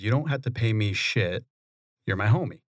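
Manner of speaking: ordinary talk, nothing marked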